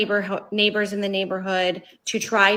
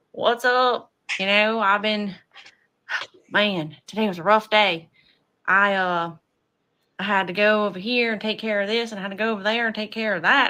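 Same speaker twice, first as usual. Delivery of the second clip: put-on down-home Southern country accent. Imagining suddenly talking this way at work, in a put-on southern accent. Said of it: "if I all of a sudden started talking like that".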